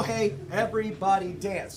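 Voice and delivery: ordinary talk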